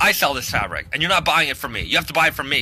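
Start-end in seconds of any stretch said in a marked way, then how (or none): none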